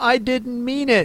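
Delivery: gentle, high-pitched pleading tone. Reading the story aloud, Alice apologizes to the offended mouse: pleading. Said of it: "pleaded poor Alice".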